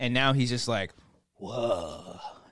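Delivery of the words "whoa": long, slow, drawn-out whoa. Imitating a baby's reaction: Keanu Reeves impression. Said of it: "Like Keanu Reeves".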